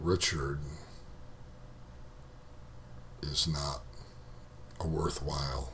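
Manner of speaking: very soft, extremely slow, hushed, halting, barely intelligible. Coaching a listener through a voice exercise, saying the phrase extremely slow. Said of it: "Almost so slow that it doesn't make sense anymore".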